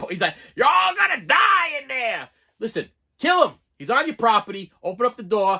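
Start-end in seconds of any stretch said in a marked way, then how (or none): 0.5-2.3 put-on slow, high, hollering old man yell. Retelling what the old man in the film yells at the family: imitating an old man yelling. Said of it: "He's yelling at you".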